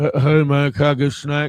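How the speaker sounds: loud, mumble-mouthed, stumbling speech. Retelling what a stranger asked at a gas station: imitating mumbling speech. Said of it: "he was all mumble-mouthed".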